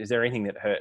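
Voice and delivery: ordinary talk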